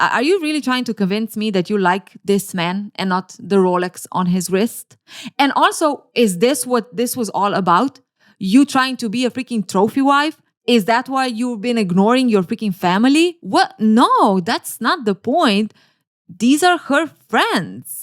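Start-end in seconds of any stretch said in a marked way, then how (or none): none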